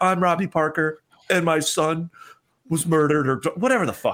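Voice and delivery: put-on sad voice. Mocking how he got in character for grief, fake-sad Robbie Parker impression. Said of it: "let me get in character".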